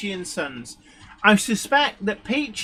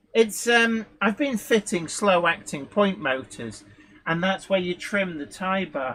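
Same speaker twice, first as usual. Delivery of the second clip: normal talking voice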